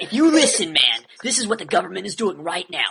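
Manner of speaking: intense, menacing, dead-serious, utterly convinced delivery. Imitating an interviewee who says ridiculous things: Jesse Ventura voice. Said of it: "this voice where it's super convincing".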